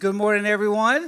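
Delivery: lively, pumped-up, loud, energetic delivery. Speaker repeating the morning greeting after asking the audience for more energy: more energetic greeting. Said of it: "A little bit more energy than that".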